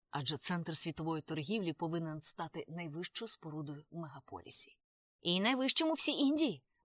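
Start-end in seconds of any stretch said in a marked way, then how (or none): 5.2-6.5 boastful, proud, raised voice. A man boasts to his companion about a new building, proudly declaring. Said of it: "гордо заявив Прабакер".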